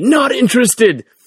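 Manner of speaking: high-pitched, shrill, loud scream. Retelling how a man following into the men's room screamed: imitating someone screaming. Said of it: "he just screams at me".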